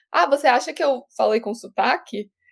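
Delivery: plain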